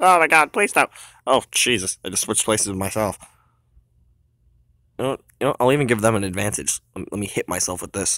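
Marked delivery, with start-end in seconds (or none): 0.0-0.9 high, loud, freaked-out pleading. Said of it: "he's freaking out".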